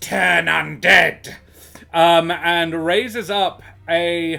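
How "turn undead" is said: rough, creaky, hissed-out words. Acting out a character's line after he shakes his head, hissing. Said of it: "and then he hisses out".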